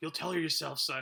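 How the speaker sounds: creepy put-on voice. Retelling a movie scene: Donald Sutherland's creepy voice. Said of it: "Donald Sutherland's creepy voice".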